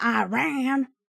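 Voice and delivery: "iran" pronounced with an American accent. A Spanish speaker says a word the American way: American accent on "Iran". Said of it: "I can also say it in American".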